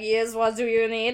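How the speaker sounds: put-on French maitre d' accent. Retelling a movie scene, voicing the maitre d': put-on french accent. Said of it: "the very French maitre d' is like".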